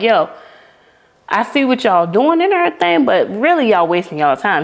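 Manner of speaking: mock dripping sarcasm, swooping, from the chest. Retelling the prophet Elijah mocking the false god's worshipers: sarcastic Elijah voice. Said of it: "He was hitting them with a lot of sarcasm".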